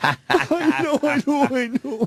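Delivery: high, blubbering sob. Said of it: "Just a blubbering idiot".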